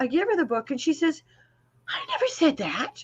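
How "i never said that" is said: very proper New England lady voice. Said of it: "Very proper New England lady".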